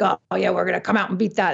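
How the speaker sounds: imitated German accent. Retelling what competitors said about beating the record: imitating a German accent. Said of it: "they do it in a German accent".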